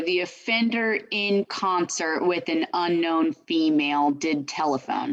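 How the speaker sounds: ordinary delivery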